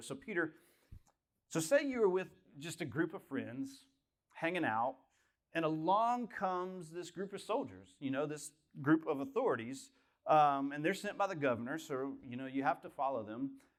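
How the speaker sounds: ordinary talk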